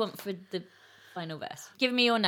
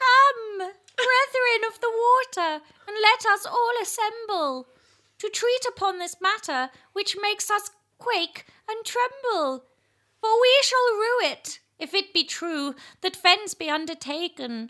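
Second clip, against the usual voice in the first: very high, loud, warbling, quavering owl-like voice; 12 semitones higher, 5 dB louder than usual. Reading a verse aloud while trying to sound like an eel, quavering owl-like voice. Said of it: "I thought it was more of a quavering owl".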